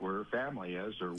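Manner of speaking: plain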